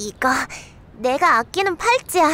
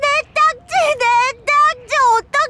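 crying, much higher and louder; 13 semitones higher, 5 dB louder than usual. An older sister who just lost all her cards in a card game, crying over lost cards. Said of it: "누나 울지 마".

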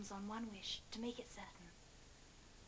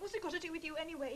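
ordinary delivery

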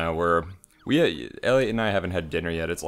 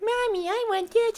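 put-on very high, cutesy little-girl voice. Describing how someone might sound, the speaker imitates Webby from DuckTales in a cutesy Webby voice. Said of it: "you think she'd have a cutesy".

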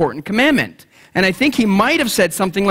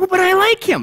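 put-on girly voice, much higher; 11 semitones higher than usual. Speaker acts out what women say about a man, girly voice. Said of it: "That's my girl voice".

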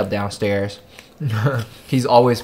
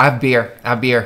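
normal talking voice

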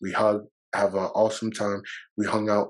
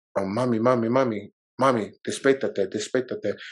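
put-on tearful crying plea, slower. A son recounts speaking to his mother, retelling a tearful plea. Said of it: "I immediately start crying".

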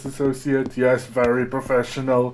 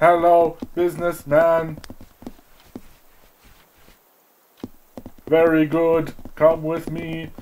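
stiff, mechanical robotic voice; 4 semitones higher than usual. Leading a conga line of business professionals, in a robot voice. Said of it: "I'm doing them like robots".

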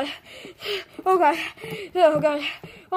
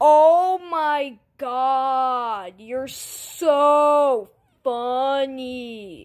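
very slow sarcastic drawl, "so" drawn out; 3 semitones lower than usual. Replying to a 'your mom' comeback: sarcastic. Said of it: "She was being sarcastic".

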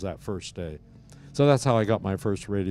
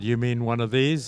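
usual speaking voice

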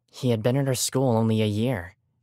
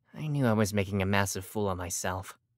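ordinary delivery

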